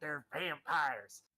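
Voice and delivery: put-on American Southern accent with a confiding tone. Leaning in to tell someone something in a story, in a southern accent. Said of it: "I don't know why I put a southern accent on it".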